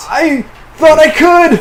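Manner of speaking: high-pitched, loud, panicked delivery.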